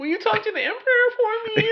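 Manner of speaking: very high, pleading, whining voice. Retelling a scene where a middle-manager type pleads to Vader, imitating a whine.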